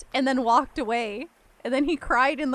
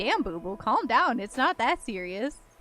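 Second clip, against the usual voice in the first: ordinary talk, nothing marked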